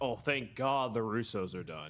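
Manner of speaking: plain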